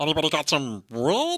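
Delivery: high chipmunk voice. Urged by friends, the speaker does Uncle Joey's chipmunk voice from Full House. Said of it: "I could do Uncle Joey's chipmunk voice".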